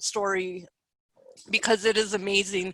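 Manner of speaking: low, soft, choked-up, emotional voice. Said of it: "I'm a little emotional".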